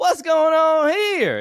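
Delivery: poorly put-on Southern accent. Acting out southern people watching football, in a terrible fake southern accent. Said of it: "I'm still doing a Southern accent".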